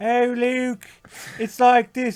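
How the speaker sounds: put-on slightly British-accented voice. Speaker imitates an actress's line from a movie, slightly British accent. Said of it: "It's not British, but it's a little British".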